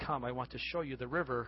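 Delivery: ordinary delivery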